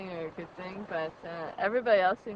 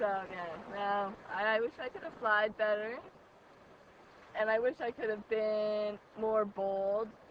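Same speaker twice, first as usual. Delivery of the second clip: ordinary talk, nothing marked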